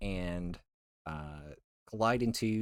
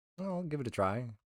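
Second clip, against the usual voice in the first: high, flustered, hurried and panicky; 5 semitones higher than usual. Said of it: "The reason I sound like I'm panicking right now".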